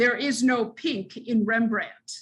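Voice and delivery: acted, very stern, severe, unbending tone. Retelling what the chief curator said in his office, imitating a stern voice. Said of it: "in a very stern voice".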